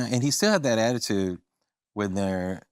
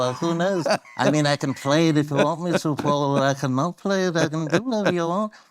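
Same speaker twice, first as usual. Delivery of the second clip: full-mouthed impression, much higher pitch; 7 semitones higher, 3 dB louder than usual. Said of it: "George used the whole mouth".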